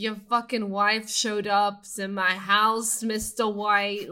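imitated Bronx accent. Retelling a stoned man's rant, in a put-on bronx accent. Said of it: "Why are you making him sound like, like he's from the Bronx?".

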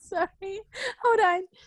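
high, laughing voice.

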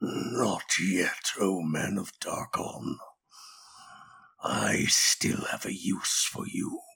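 empty, hollow, eerie, breathy whispered voice. Storyteller voices something speaking out of a man with burst blood vessels: hollow voice. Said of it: "a hollow voice suddenly erupts from him".

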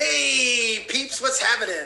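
loud pirate voice, "hey" drawn out. A guest just introduced on a Facebook live show greets viewers; pirate-like voice. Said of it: "It kind of sounded like a pirate".

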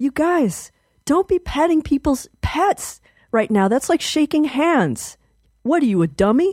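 shrieked, high, shrill scolding yell. Retelling running out at a woman petting their cat, retelling own yelling. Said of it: "I ran out and I yelled at her".

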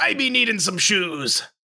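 put-on old-time pirate voice. Speaker asks if a customer in the store talked like this, pirate voice. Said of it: "Did he talk in pirate speak like".

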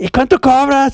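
mock hollering, high-pitched shout. Retelling someone shouting at a woman from a car window, re-enacted shouting. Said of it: "le empieza a gritar a una morra güey así de".

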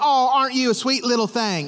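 light southern twang, "thing" said as "thang". Quoting a woman from down south the speaker knew, with a twang. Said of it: "she kind of had a little bit of a twang to her voice".

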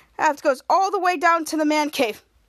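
ordinary talk

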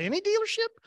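very high incredulous tone.

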